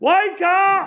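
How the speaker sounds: very loud, high shout. Speaking to the church, telling them what Jesus says: raised voice. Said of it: "I'm going to raise my voice".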